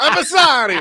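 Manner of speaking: put-on Italian accent. Joking about dodging someone yelling on the field: put-on italian accent. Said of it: "You just pull out an Italian accent".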